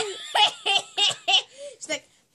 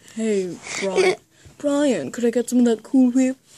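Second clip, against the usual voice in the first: put-on British cartoon voice; 6 semitones lower, 4 dB louder than usual. Taking the next turn in an impressions round, addressing a character: Stewie impression, British accent. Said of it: "Wait, that was British".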